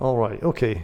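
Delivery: ordinary delivery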